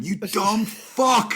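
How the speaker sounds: sudden, high, instinctive scream. Retelling insulting a dazed driver from a passing car: retelling own scream. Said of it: "I just screamed at him".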